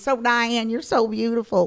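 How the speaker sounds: put-on loud, high Southern accent. Imitating mom praising a visitor: imitating mom's Southern accent. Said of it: "'Cause she has a Southern accent".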